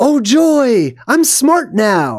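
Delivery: very slow, high, swooping, gushing, thrilled cry. Retelling a movie scene, imitating the Scarecrow being excited. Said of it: "So he's all excited".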